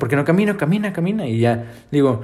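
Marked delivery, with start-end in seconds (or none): 0.0-1.3 put-on shouting, higher. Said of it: "Así me grita como de lejos".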